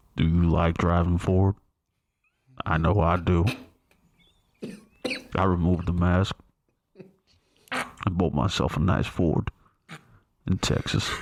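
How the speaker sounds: put-on commercial narrator voice. Doing a Ford commercial on request: Sam Elliott impersonation. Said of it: "That was my Sam Elliott impersonation".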